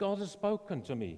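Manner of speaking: put-on German-accented voice. Retelling what a man told his german mission organization: german accent. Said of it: "in his German voice".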